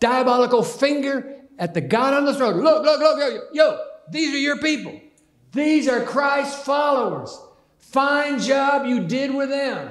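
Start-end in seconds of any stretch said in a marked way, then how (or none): 2.6-9.9 mocking, taunting, gloating, hellish triumphant tone. Reading the words of a figure taunting God on the throne, with hellish triumph. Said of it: "saying with hellish triumph".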